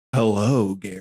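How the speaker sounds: mock seductive, put-on sexy voice. Asked to let the others hear his sexiest voice, greets Gary in it. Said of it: "let me hear your sexiest voice".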